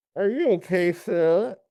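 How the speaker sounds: put-on muffled voice, as if mouth stuffed. Trying a line with paper napkins in the mouth: muffled Marlon Brando voice. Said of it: "attempt at being like Marlon Brando by adding napkins to his mouth".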